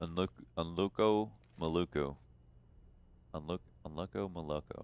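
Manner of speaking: put-on deep, flat voice. Calling a play on a match the way j w would: j w deep voice. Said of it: "I said it like J W".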